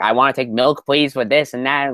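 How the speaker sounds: put-on, high-pitched Brooklyn accent. Imitating an actor's accent in a film: imitating DiCaprio as Howard Hughes. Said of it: "his voice was so, like, high-pitched".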